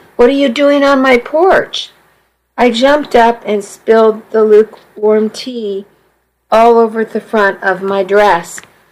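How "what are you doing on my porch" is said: frightened, quavering, high, trembling voice. Narrator reads Mama questioning her daughter on the porch, trembling with fear. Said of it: "Her voice trembled fearfully".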